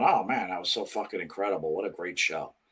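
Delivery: raving, gushing, excited radio host voice. Mocking a wrestling show's praise of a pay-per-view: imitating Busted Open hosts. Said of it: "some wrestling show like Busted Open going".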